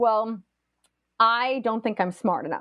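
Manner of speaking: normal talking voice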